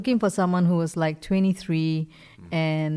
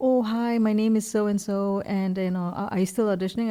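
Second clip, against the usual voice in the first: put-on shy voice, higher; 3 semitones higher than usual. Retelling a phone call from an actor: imitating a shy caller. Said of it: "she sounded so shy on the phone".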